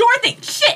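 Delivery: loud calling out. Voicing a character who sees a friend go down: hollering for Dorothy. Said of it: "start hollering for Dorothy".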